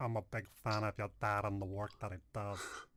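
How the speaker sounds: soft, quiet, hushed character voice. Explaining a chat command to a co-host, speaker does a Little Nicky character impression. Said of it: "That's that's my impersonation of".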